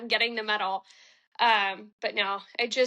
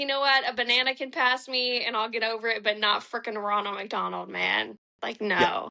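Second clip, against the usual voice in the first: usual speaking voice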